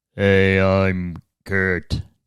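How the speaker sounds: deep, seductive, self-assured confident voice. Introducing oneself as instructed, in a seductive deep confident tone. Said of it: "introduce yourself in a seductive and deep, confident tone?".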